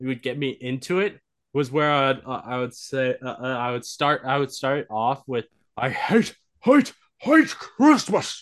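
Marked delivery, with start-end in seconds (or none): 5.8-8.4 very high, loud cartoon voice. Showing the warm-up line used to get into the voice: Grinch voice. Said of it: "that gets me into the voice".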